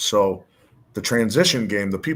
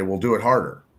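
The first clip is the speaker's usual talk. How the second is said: ordinary talk, nothing marked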